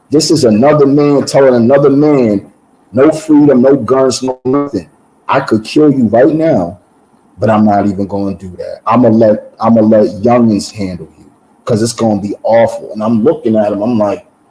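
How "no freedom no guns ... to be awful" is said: normal talking voice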